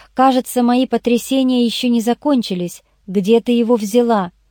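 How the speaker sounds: ordinary delivery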